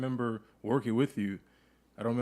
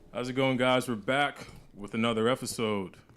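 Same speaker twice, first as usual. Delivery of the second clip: put-on radio announcer broadcast voice. Host opening another episode for the audience, in a radio announcer voice. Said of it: "Gil with the radio voice".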